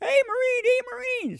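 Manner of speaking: put-on high yell like a little boy. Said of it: "I hear this little boy yelling".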